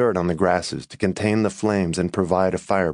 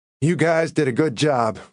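proud, approving, pitched-up tone; 8 semitones higher than usual. After the forest fire, he speaks to his firefighters in the truck, proudly. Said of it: "he said proudly".

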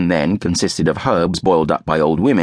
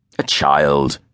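dismissive, brushing it off, lower pitch; 4 semitones lower than usual. Francis brushes off the narrator's mention of a child from college; dismissive. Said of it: "Francis said dismissively".

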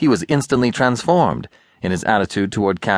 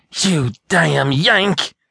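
astonished, amazed, furious, enraged outburst, pitched up; 8 semitones higher than usual. A narrator reads the little rebel's outburst at Catley, amazed and enraged. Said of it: "ejaculated the little rebel, as amazed as enraged".

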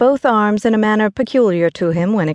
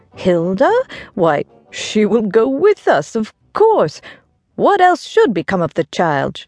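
surprised tone with swooping pitch. George answers his wife's question about their child Hilda, in a tone of surprise. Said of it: "replied her husband in a tone of surprise".

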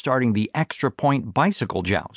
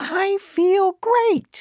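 very high, squeaky falsetto shout, impossibly high. A kid pushes himself to his feet and shouts in high falsetto. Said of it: "He shouted in an impossibly high falsetto".

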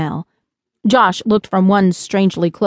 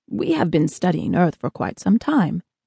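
ordinary delivery

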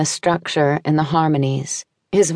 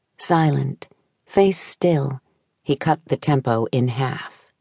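ordinary delivery, nothing marked

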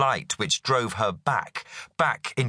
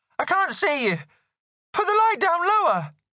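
shrill, insistent, very high. A woman shielding her eyes from a light beam demands again, shrilly. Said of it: "she demanded again, more shrilly this time".

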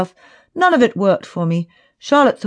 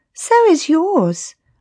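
sultry, seductive purr, pitched up; 9 semitones higher than usual. Reading a story where the narrator answers a man: seductive purr. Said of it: "I purred in what I hoped was my most seductive voice".

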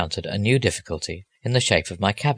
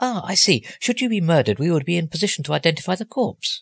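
breezy, cheerful, cold-blooded, high-pitched delivery; 9 semitones higher than usual. Reading a story aloud, a man answers the narrator's request in case of trouble: cheerful and cold-blooded. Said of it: "He said it so cheerfully and cold-bloodedly".

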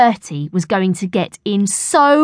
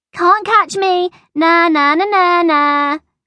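weedy, high-pitched little schoolyard jeering tone; 9 semitones higher than usual. After throwing an apple core at Bertie, Noel Nick taunts him, jeering in a weedy voice. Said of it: "jeered a weedy voice".

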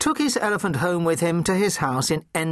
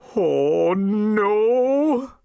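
groaning words, "no" dragged long; 4 semitones higher, 3 dB louder than usual. A car owner returns to find an elephant sitting on his flattened mini: groaning. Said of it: "groaned Mr. Emblem".

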